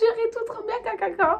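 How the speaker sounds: very high-pitched, delighted, excited gushing.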